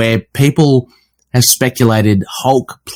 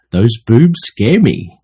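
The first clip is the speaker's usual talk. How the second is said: very deep bass voice, slow and unhurried. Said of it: "his very deep voice".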